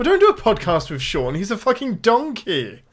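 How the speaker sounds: sing-song Welsh accent. Podcast host demonstrating a favourite insult about co-host Sean, Welsh accent. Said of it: "describe somebody as a donkey in a Welsh accent".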